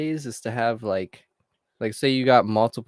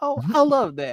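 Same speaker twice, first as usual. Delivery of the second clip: put-on voice, pitched higher; 11 semitones higher than usual.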